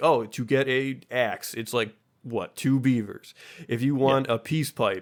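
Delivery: ordinary delivery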